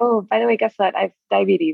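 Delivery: plain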